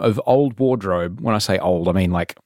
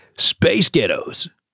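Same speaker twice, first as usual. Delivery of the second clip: American accent, pitched up; 6 semitones higher than usual. Demonstrating an accent wordplay trick, saying the phrase again: American accent. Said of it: "say space ghettos in an American accent".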